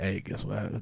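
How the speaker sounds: mock whispering. Retelling a cousin's phone call, imitating someone whispering.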